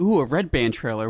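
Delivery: mocking, put-on sarcastic delivery. Retelling what the other speaker said at a trailer: imitating a sarcastic remark. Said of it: "I was so sarcastic about it too".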